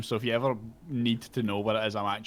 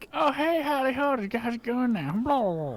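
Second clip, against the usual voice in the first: drawling goblin voice with southern drawl, very high; 3 dB louder than usual. After someone asks what Goblin in a southern drawl sounds like, answering as Goblin in a southern drawl. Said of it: "What does Goblin in a southern drawl sound like".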